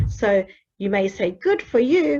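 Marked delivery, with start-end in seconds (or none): 1.3-2.2 genuinely pleased, sincere, high-pitched voice. Showing how the way a phrase is said changes it: sincere praise. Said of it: "misinterpreted because of the way you say it".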